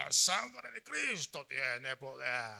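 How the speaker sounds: low, hushed, sepulchral voice from beyond the grave. Mocking how some people say this religious phrase: mock voice from beyond the grave. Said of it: "con una voz de ultratumba".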